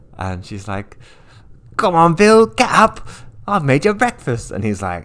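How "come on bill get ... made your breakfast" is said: bad fake British accent, very high-pitched and loud. Retelling a scene from a musical in a bad British accent. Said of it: "a lot of bad, uh, British accents".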